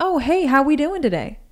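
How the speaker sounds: mock gushing, over-the-top cheery, very high pitched. Retelling how customers were greeted at work: imitating an over-the-top friendly greeting. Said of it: "greet people like I've never greeted people before".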